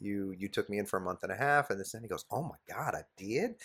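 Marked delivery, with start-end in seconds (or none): 2.3-3.5 put-on heavy, thick Southern drawl, slow. Retelling a talk with a man who took them in, the speaker quotes him in a thick Southern accent. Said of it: "he's got this thick Southern accent".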